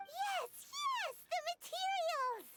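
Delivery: all excited. A game character finally gets the message across, excited. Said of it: "Paimon got all excited".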